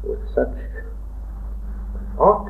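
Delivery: slow, soft, hushed.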